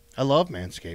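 unhappy, unenthusiastic tone. Claiming to love the sponsor after being called unhappy: unhappy. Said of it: "You don't sound like it".

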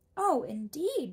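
very loud, high exclaiming cry. A man hears the travelers are going to see the Great Oz, exclaimed. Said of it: "exclaimed the man".

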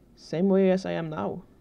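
plain reading voice

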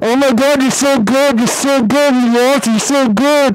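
ranting, mouth on the mic, drawn-out good. Mocking how other players sound on voice chat, mic-in-mouth gamer impression. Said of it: "they get their mic and they put it in their mouth".

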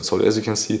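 ordinary talk

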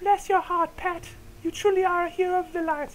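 very high, put-on girlish falsetto. Voicing a girl character addressing Pat, in a girl voice. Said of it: "girl voice".

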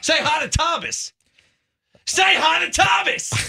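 very high, drawn-out yell into a microphone. Urging another speaker to greet a young fan, yelling into the microphone. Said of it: "stop yelling into the microphone".

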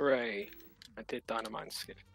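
flat, deadpan, unexcited, prideless cheer. Cheering their own game trick after too many tries, sounding unproud. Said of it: "You don't sound so proud".

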